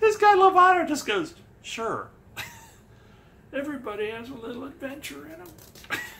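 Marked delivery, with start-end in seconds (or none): 3.5-6.0 completely winded, puffing, out-of-breath voice. Acting out his answer about the hidden treasure, do a Fenn impression, acting completely winded. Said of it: "That's my Fenn impression. ... act like you're completely winded".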